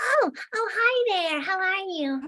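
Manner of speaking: put-on high, very slow puppet voice like a small child. Voicing Tilly the puppet, greeting another speaker: Tilly puppet voice. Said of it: "when I bring Tilly to life".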